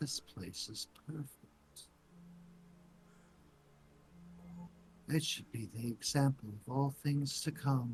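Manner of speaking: soft whispered voice. Voicing a whisper that a player hears in his mind: whisper in the mind. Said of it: "you hear a whisper in your mind".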